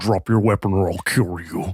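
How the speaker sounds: low, disguised voice-changer sound, masked. Retelling getting really close to someone's ear, voice-changer voice. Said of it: "in my best like voice mod changer v- thing I could do".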